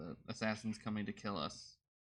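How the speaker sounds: normal talking voice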